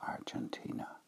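very soft, unvoiced whisper.

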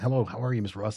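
very quiet, soft, hushed. Retelling greeting someone they spotted in a store's produce section, very quiet. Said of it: "I just very quietly said".

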